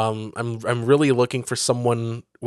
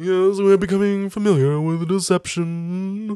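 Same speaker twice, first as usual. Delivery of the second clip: fun, high, otherworldly put-on alien voice; 8 semitones higher than usual. Quoting the aliens who are becoming familiar with deception: imitating the aliens' voice. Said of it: "It's a fun voice".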